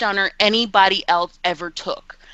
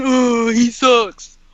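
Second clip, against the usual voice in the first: mocking online troll voice; 3 semitones higher than usual. Mocking how a Twitter troll talks: imitating a Twitter troll. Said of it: "tried to go and be a Twitter troll".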